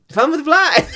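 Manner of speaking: high, loud voice, laughing while speaking.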